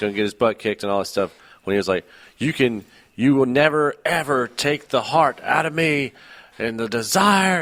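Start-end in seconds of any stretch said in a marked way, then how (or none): 2.4-7.6 imitated wrestler-style scream, higher pitched. Retelling a wrestling promo's climax line: imitating Cena screaming. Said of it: "and he was screaming".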